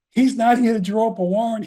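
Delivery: acted screaming. Retelling a courtroom exchange, imitating the D A screaming. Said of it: "The D A started screaming".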